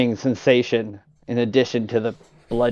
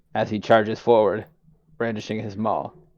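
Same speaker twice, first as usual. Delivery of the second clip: normal talking voice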